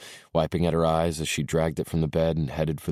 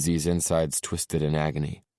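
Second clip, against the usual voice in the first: ordinary delivery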